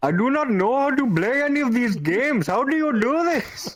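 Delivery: broad, exaggerated Indian accent, pitched very high. Speaker retelling what a guy said to them, in a stereotypical indian accent. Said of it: "very stereotypically Indian accent goes".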